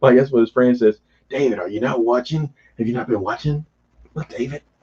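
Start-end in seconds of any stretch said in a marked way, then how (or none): 1.3-4.6 softly spoken voice. Retelling a scene, speaker quotes what the friend says, impression of the friend's voice. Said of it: "That's my rendition of his voice".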